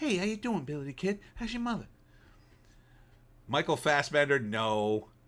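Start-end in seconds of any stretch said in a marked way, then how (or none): 0.0-1.9 pitched very high, squeaky. Mocking an actor's voice while ruling him out of a cowboy role: Mark Wahlberg impression. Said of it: "He's got the look, but his voice, man".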